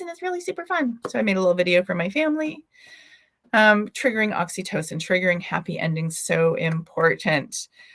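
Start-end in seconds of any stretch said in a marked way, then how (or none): 0.0-1.0 very high, squeaky helium voice. Demonstrating edible helium candy for her family, in a helium voice. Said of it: "you talk like this".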